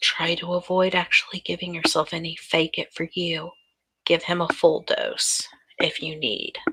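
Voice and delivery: soft, hushed, secretive whisper. A woman instructs him as he slips it into his suit jacket, whispering. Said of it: "Anne whispers".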